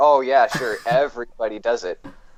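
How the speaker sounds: mock sarcastic tone. Retelling own reply to a claim that everyone does it: retelling own sarcastic reply. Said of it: "I was being sarcastic".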